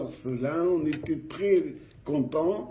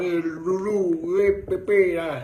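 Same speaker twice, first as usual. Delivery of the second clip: put-on Algerian-accented speech; 4 dB louder than usual. Telling a story, the speaker imitates how their boss talked: Algerian accent impression. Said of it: "un Algérien avec l'accent ah baba".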